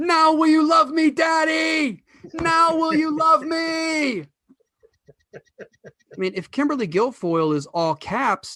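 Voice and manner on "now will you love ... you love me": very high, slow stretched-out shout, "me" drawn out. Picturing him after a speech, shouting into the camera: imitating Donald Trump Jr. shouting. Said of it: "he shouts into the camera".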